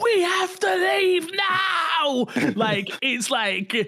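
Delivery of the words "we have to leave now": very high, very slow, stretched-out scream. Retelling a game where they urged a fellow player to leave, retelling a scream. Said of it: "I'm screaming at Minnie".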